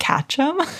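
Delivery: put-on whisper. Retelling what another speaker just said: imitating a whisper. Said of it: "Alex just whispered".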